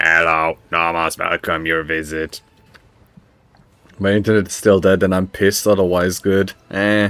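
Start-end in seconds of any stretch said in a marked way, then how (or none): 0.0-2.4 low, rasping, robotic machine voice. A game master voices a servitor's vox greeting a player's character, in a rasping voice. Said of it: "The vox emits a rasping voice".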